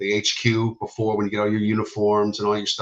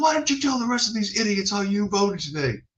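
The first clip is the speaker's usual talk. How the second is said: high, barked drill-sergeant screaming yell; 12 semitones higher than usual. Retelling basic training on election day, the drill sergeant addressing everyone: imitating a drill sergeant screaming. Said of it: "He's screaming at everybody".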